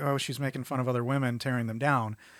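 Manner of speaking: ordinary talk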